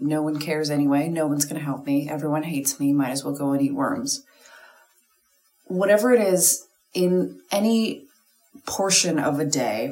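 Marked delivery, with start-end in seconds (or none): none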